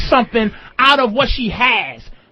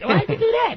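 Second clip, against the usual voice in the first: much higher pitched, indignant protesting tone. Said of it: "and I'm like".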